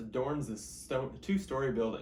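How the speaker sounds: ordinary delivery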